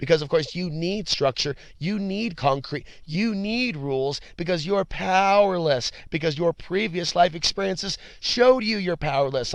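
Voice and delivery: fake-serious, put-on sarcastic tone. Mocking the book of rules for recovery: put-on sarcastic tone. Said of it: "I'm being sarcastic".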